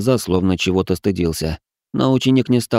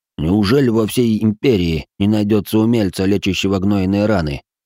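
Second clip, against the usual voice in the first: ordinary delivery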